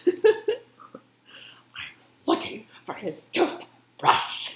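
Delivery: venomous, spiteful, very high, slow and drawn-out. Retelling a parent's sharp reply during an argument: imitating a venomous tone. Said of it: "she said it with such, like, venom".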